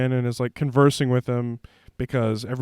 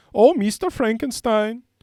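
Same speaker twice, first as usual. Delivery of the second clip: high, put-on Dutch-sounding accent. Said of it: "she talks like this".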